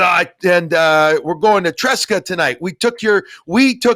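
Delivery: put-on Quebec French accent on English. Retelling what a Bruins fan said at a store, French Canadian accent. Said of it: "He had a French Canadian accent".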